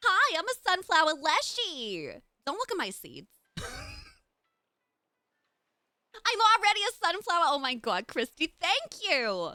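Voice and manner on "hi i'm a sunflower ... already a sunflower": high, swooping, sing-song Brooklyn accent. Trying out her sunflower leshy character's voice, Harley Quinn-esque accent. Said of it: "a Harley Quinn esque accent, but I keep going into full Brooklyn".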